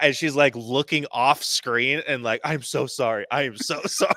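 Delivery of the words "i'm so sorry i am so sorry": frantic, panicked, freaked-out, mortified voice. Retelling how a woman reacted after being told it's not Disney: acting out a panicked apology. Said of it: "freaking out".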